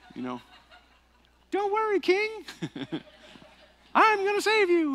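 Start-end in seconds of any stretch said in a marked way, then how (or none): 1.5-5.0 squeaky, high-pitched and bouncy. Imagining David in a movie, giving him a Mickey Mouse voice. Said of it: "And I'd give David like Mickey Mouse".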